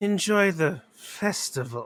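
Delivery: unsettling, ominous, creepy, eerie delivery. Voicing a guard greeting passing travellers: creepy manner. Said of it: "why did you say it in such a creepy manner".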